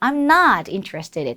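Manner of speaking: strong stress on the word not. Explaining how to emphasize not in i'm not interested in: stressed not. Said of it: "not을 좀 강조해서 말씀해 주실 때는, 발음해 주실 때는 ... 이렇게 딱 강조를 해주세요".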